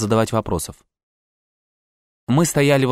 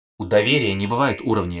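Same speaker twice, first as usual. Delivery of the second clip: plain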